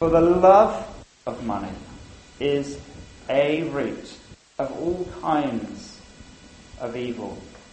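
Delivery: slow, halting, deliberate reading. Reading a verse that is often misquoted, slow, deliberate reading. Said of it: "I say that slowly".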